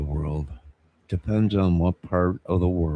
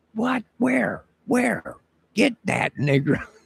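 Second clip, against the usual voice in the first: put-on very high, rough, raspy shrieking scream. Retelling a scene from a show: imitating Chappelle screaming. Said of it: "Chappelle starts screaming out".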